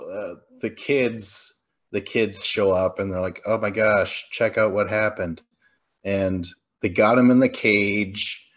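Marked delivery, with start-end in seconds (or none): none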